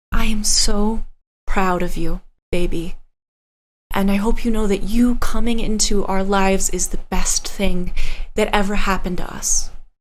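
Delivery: whispering softly. A mother hugs you close and speaks into your ear, whispering. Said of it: "she whispers in your ear".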